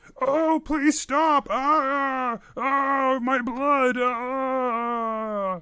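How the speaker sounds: high, very slow, pained begging deer voice. Voicing a deer being drained of blood: pained pleading deer voice. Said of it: "the deer begins to speak to you".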